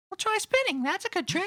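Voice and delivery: put-on very high, soft kid voice.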